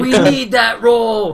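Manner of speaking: loud, slow, excited shout.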